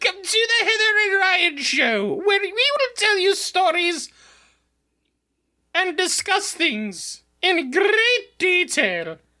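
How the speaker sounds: very high, put-on British accent. Opening the show on a co-host's challenge, in your finest British accent. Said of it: "In your finest British accent".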